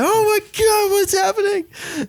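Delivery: very high, frantic, bewildered shriek. Retelling a fish hooking and running off: imitating own screaming. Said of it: "I'm screaming like".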